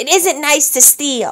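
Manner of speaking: growling pirate captain voice. Reading the boss pirate after he stops laughing, growling. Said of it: "stopped laughing and growled".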